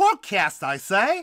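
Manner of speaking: fake British accent. A podcast host finishes the show's welcome, in a put-on british accent. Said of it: "one of my favorites of your accents".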